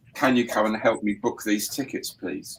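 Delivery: ordinary delivery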